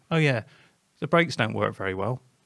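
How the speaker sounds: ordinary delivery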